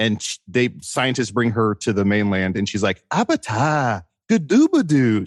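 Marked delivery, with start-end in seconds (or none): 3.1-5.3 made-up gibberish with big swooping pitch. Describing a movie character who has her own language: imitating Nell's invented language. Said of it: "she has her own language".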